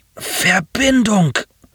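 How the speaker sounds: high, barely modulated moan. A stranger groans a single word to the man coming to help him. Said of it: "stöhnte der Europäer".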